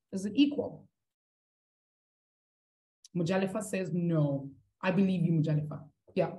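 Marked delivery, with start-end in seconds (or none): none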